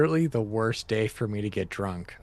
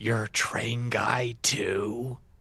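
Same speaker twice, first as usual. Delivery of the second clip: gentle, hushed, slow voice with drawn-out "too"; 3 dB quieter than usual. Looking up at Richard in character and asking softly: soft voice. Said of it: "in a soft voice".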